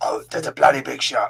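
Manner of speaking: put-on rough, creaky voice. Joking about a shark film sequel, doing a bad Jason Statham impression. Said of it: "Can't do his voice".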